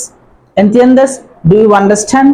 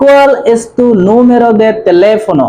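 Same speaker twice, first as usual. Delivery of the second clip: plain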